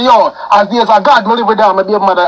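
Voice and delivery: ordinary talk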